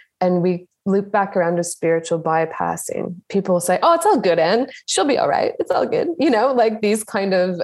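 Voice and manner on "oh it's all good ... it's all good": dismissive, sing-song, fake put-on Australian accent. The speaker quotes what people tell the speaker: put-on accent. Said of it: "I like the accent that you put on there".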